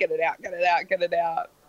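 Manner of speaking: ordinary talk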